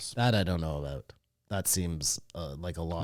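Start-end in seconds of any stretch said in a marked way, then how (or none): 0.1-1.1 dismissive, brushing-off tone, lower and quieter. Answering another speaker's theory about its release: dismissive tone. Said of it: "You said it with a very dismissive tone".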